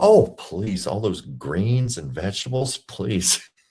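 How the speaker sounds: slow, very facetious, tongue-in-cheek sarcasm. Reacting to another speaker skipping the salad: facetious. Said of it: "Being very facetious".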